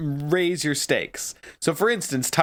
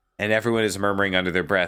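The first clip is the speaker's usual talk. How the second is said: normal talking voice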